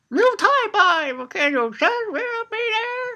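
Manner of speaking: put-on very high, slow old-man voice. Retelling what an old master says in the chapter: imitating an old man's voice. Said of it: "'cause he's an old man".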